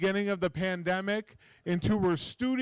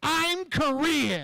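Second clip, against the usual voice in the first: put-on irritated, pissed-off tone, high and swooping; 7 semitones higher than usual. Retelling what a woman said when she turned around, imitating a pissed-off woman. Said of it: "all pissed off at me, and she goes".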